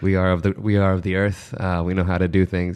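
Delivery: ordinary delivery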